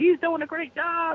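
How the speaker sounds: put-on rural Southern drawl. Speaker quotes people praising him, in a mocking cracker accent. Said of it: "I hate to do that cracker ass accent".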